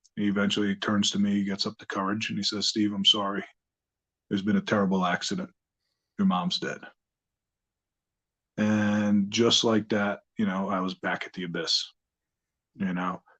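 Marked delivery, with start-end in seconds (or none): 2.7-6.8 acted voice catching with emotion. Retelling how the principal broke the news of an accident: imitating someone choking up. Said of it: "he's choking up".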